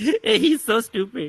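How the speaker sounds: mock tearful, high, sobbing wail. Retelling how mom cries at him for grandkids: imitating mom crying. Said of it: "She's crying".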